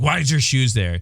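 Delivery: mock passive-aggressive, thinly veiled irritation, pointed. Retelling what someone said as they walked in after drinking, mimicking passive-aggressive annoyance. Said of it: "it was all passive aggressive annoyance".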